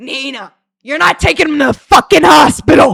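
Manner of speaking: put-on booming, furious, very loud New York Italian accent. Retelling what her stepdad said to nina; imitating loud angry new york italian man. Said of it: "New York Italian guys who's super fucking loud and like angry".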